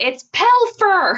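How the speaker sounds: put-on, high-pitched shrieked screaming. Repeating what someone just screamed, retelling a scream. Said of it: "Serenity just screamed".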